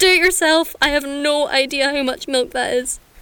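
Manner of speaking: high, put-on blind-panic outburst. Retelling how a shop worker answered a tea order: imitating a panicked reply. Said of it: "in blind panic and said".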